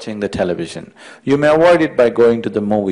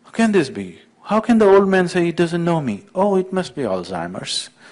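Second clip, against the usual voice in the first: mock upset, bewildered, distraught, pitched-up fretting; 6 semitones higher, 3 dB quieter than usual. Telling a joke, speaking as a turned-away pope: distraught. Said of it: "He was distraught".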